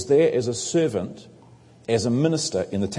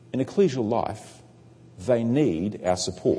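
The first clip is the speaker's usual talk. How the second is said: very slow, each word carefully and clearly enunciated. Speaker addressing brothers and sisters, repeating a point very slowly and clearly. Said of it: "I want to say that again very slowly and clearly".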